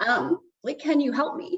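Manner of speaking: high, emotional, pleading tone. Recounting calling dad from a hotel room for help, getting emotional. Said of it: "it's making me emotional".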